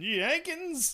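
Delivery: very high-pitched yelling. Joking about what another speaker yells, imitating someone yelling. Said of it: "You just yell that when you're done".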